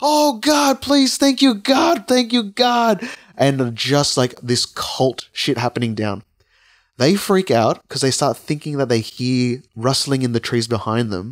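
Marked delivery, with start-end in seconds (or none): 0.0-3.1 mock very high, fervent yelling. Retelling a story of a group in a park at night: imitating someone yelling.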